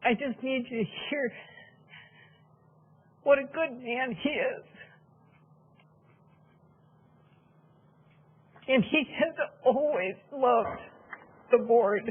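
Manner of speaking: tearful, crying while speaking. Speaking during public comment in support of someone, crying while speaking. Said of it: "I'm sorry for the tears".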